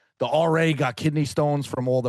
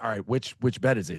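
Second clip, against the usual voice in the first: put-on whisper. Retelling a girl asking which bed at night: imitating a whisper. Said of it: "she's whispering to him".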